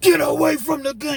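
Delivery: very high, top-of-lungs scream. Describing an officer pointing a weapon, imitating an officer screaming. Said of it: "screaming at the top of his lungs".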